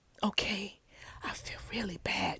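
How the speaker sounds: soft, hushed whisper under the breath. Acting out the pastor's apology scene: imitating someone whispering. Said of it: "he's whispering this whole time".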